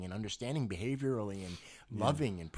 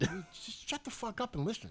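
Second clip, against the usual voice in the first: put-on angry New York accent, higher pitch; 10 semitones higher than usual. Acting out a New Yorker who denies being angry: imitating an angry New Yorker. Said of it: "Why are you always so angry?".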